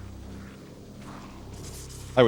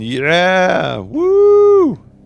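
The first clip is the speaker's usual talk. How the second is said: high, loud, fake cheering crowd whoop. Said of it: "They're sitting there yelling".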